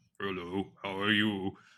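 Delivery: ridiculously deep, obnoxious put-on voice. Asked about a talking version, the guest demonstrates its obnoxiously deep voice. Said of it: "really just obnoxiously deep voice".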